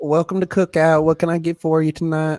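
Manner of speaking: put-on, thick twangy accent. Retelling a drive-thru visit, imitating the worker over the intercom with a twang. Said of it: "Oh, the twang".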